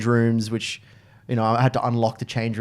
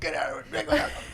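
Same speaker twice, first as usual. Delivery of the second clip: high, soft, bossy little voice. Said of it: "'cause she's like the".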